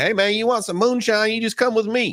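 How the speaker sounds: put-on very high-pitched, kooky, crazy old-man voice. Retelling what a stranger at a gas station offered: imitating a crazy old man. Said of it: "this crazy old man who came into the gas station, he was like".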